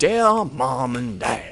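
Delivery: put-on old-fashioned period voice. Retelling how a letter home to mom and dad is read, in an old-timey Civil War voice. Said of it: "in a Civil War voice".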